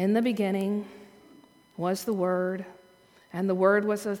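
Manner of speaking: sleepy, dull, flat, low droning bored reading. Recalling reading a text that felt so boring, imitating bored, sleepy reading. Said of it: "it was so boring. I was reading it like this".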